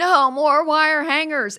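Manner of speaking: high, loud, drawn-out screaming rage. Describing a movie scene to a listener, imitating Joan Crawford's scream. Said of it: "And she screams".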